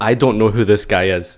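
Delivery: put-on serious deadpan. Retelling how someone denied knowing a friend to a judge: imitating a dead serious deadpan. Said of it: "dead serious face".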